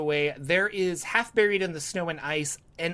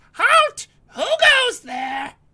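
very high, loud, shrill, wild, swooping shriek; 10 dB louder than usual. A narrator reading a story, voicing a jester-clad giant creature, high-pitched shriek. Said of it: "with a high pitched voice it shrieks".

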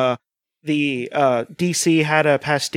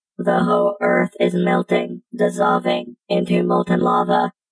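put-on robot voice, much lower pitch. A host announces a bit, then speaks in a robot voice. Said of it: "I'm going to do the robot voice now".

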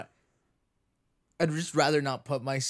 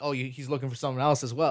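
normal talking voice

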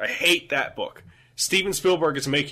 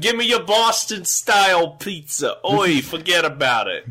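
clumsy, bad, fake New York accent; 4 semitones higher, 4 dB louder than usual. Two speakers trade accents, one trying a bad new york accent. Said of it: "Both you and I are doing very, very bad jobs".

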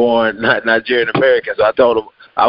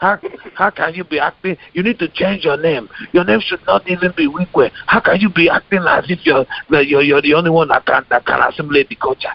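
natural Nigerian accent, pitched up; 6 semitones higher than usual. Asked by the others to say it in a nigerian accent, performing it. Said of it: "I would say it in the Nigerian accent".

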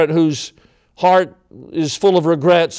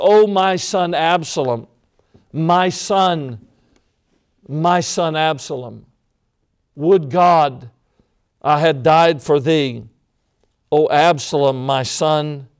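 put-on sobbing, much slower. Preacher voicing a grieving father's words to listeners, imitating a father sobbing. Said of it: "sobbing out those tragic words".

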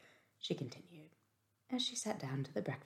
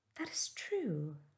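cheery, sunny, bright, cheerful tone. Marianne answers a remark about Sir John in a cheerful voice. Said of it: "cried Marianne in a cheerful voice".

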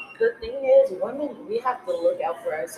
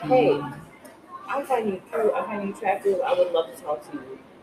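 ordinary talk

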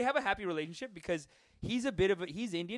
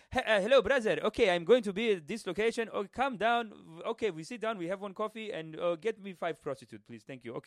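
put-on Arabic accent. Speaker recalling accent phone calls with his buddy, in an Arabic accent. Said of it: "we would call with an Arabic accent".

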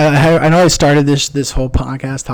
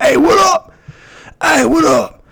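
very high-pitched, slow, drawn-out drawl. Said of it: "That's specifically my impression of [name]".

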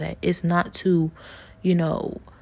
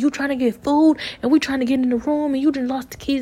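mock angry cursing and scolding, pitched up; 8 semitones higher than usual. Retelling how dad cursed the speaker out over lost keys: imitating dad angrily cursing out. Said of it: "And he's cursing me out".

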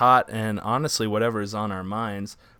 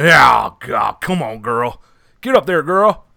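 very loud, slow and steady booming holler; 3 semitones higher, 9 dB louder than usual. Showing the others the Arthur Morgan line that triggers it: impression of Arthur Morgan. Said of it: "Let me hear your Arthur Morgan".

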